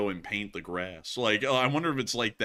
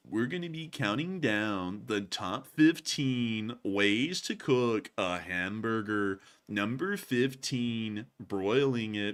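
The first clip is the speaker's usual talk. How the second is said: very slow, drawn-out countdown narrator voice. Imitating a YouTube voice actor counting down a top fifteen list: imitating a top fifteen narrator. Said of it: "He would be like".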